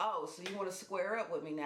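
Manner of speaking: normal talking voice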